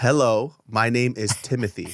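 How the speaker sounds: usual speaking voice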